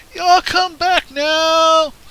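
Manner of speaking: shrill, very loud, high, stretched booming holler. In a role-play, someone in the kitchen calls after departing guests in a big booming voice. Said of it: "a big booming voice from the kitchen".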